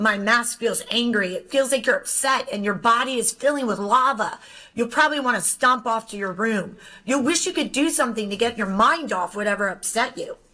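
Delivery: ordinary delivery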